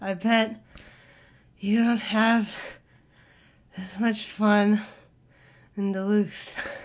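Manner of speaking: panting, breathless, halting delivery with pauses. Quoting a man's line with the pauses written down: retelling out-of-breath speech. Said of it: "He's out of breath".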